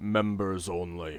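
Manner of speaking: deep, low, rumbling stone-guard golem voice. Narrator voicing the golem's reply to a player, low rumbling golem voice. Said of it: "in a uh, low, rumbling voice".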